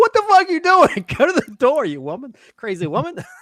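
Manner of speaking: mock very high, swooping shriek. Retelling yelling at the TV while watching: retelling own screaming. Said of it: "screaming at my T V".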